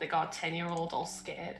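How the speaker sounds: muttering under breath. Learning the one they yelled back at is a kid, muttering under breath. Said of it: "just gonna mutter under my breath".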